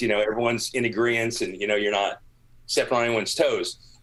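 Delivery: normal talking voice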